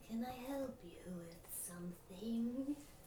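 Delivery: put-on old wispy voice. Voicing an old shopkeeper speaking from behind a customer: old wispy voice. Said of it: "wispy voice kind of right behind your ear".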